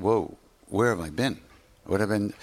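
plain

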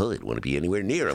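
panicky voice, rattled off fast and low.

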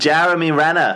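attempted Boston accent. Naming the actor who played Hawkeye, in an attempted Boston accent. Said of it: "I was trying to do a Boston accent".

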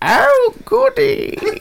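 very high, very squeaky, creaky, croaky goblin voice. Acting out a toilet goblin who greets the speaker: put-on goblin voice. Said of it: "And he says".

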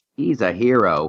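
ordinary talk

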